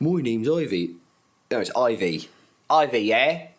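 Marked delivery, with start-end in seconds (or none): 0.0-1.0 put-on small girl's voice with Bristol accent vowels. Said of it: "but she just talks like".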